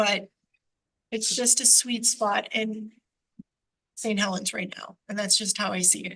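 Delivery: tearful, crying, voice breaking. Speaker explaining her signs comply with the rules, crying while speaking. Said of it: "So I'm sorry for crying".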